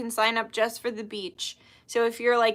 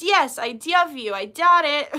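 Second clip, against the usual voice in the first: put-on loud, slow little-kid voice, words spaced out; 4 semitones higher, 6 dB louder than usual. Retelling how a little cousin always talks: imitating little cousin. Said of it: "I sound like my little cousin".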